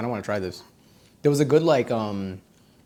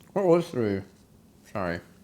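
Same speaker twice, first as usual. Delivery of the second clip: speaking through a full mouth, lower pitch; 4 semitones lower than usual. Eating and rating menu items, asking what number three was: talking with mouth full. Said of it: "Gross for me to speak with food in my mouth".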